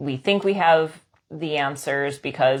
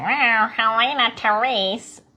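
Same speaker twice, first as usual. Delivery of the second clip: higher-pitched, displeased, disapproving voice; 8 semitones higher than usual. Describing how their mother's voice sounds in their head, imitating mother saying their name. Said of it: "my mother's voice is like".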